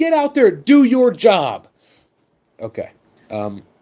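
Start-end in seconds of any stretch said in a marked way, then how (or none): 0.0-1.7 put-on excited screaming, higher and louder. Imitating a fan screaming alone in an empty stadium: imitating a superfan screaming. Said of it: "He's just screaming in the".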